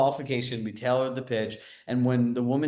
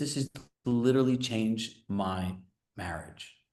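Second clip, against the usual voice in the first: soft, hushed, low-key delivery; 2 semitones lower, 4 dB quieter than usual. Retelling a linebacker friend's praise for the check-in method: imitating Vince Beagle speaking softly. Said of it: "he softly goes".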